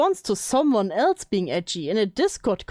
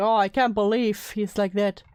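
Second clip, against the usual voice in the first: ordinary delivery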